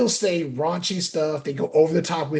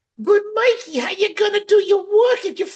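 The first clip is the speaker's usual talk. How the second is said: very high, loud, shrill TV sitcom housewife voice; 5 dB louder than usual. Addressing Mikey, a speaker puts on an Edith Bunker voice. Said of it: "You sound like Edith".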